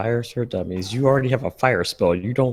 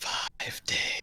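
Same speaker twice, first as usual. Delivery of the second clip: creepy voice on a phone, quieter. Echoing a deadline as the creepy phone voice from The Ring. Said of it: "Says the creepy voice from the phone, from the ring".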